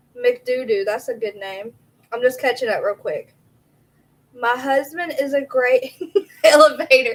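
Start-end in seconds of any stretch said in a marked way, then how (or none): 4.3-7.1 loud, laughing throughout. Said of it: "You made me laugh at a serious comment".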